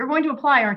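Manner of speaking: high, excited, eager urging.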